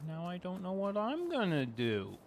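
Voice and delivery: whiny voice. Reacting after another speaker leaves in a farming game: whiny. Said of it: "I don't know why I said that so whiny".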